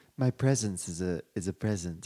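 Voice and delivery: very deep, very low cartoon character voice. Talking with others about giving friends gifts: Stewie voice. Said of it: "Was that Stewie?".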